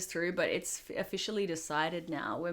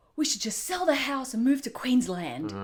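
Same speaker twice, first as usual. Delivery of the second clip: put-on stressed, agitated Indonesian accent, raised and high; 6 semitones higher, 7 dB louder than usual. Retelling what a stressed father used to say: imitating his dad's indonesian accent. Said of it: "except in his Indonesian accent".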